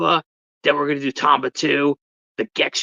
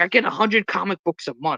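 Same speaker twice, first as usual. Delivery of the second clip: put-on thick New York accent, male, higher; 4 semitones higher than usual. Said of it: "the most New York ac-".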